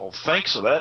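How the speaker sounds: mocking, sarcastic tone. Retelling own reply to a man who used him: imitating own sarcastic thanks.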